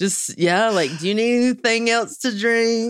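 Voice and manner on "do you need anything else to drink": high-pitched, thick, heavy Southern drawl. Retelling own childhood manners lessons in a thick southern accent. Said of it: "I had that thick Southern accent".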